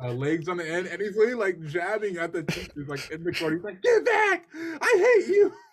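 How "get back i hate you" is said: put-on child voice, very high, loud, slow, drawn-out scream. Retelling how a kid in class screamed at the teachers: imitating a screaming kid. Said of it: "he's screaming".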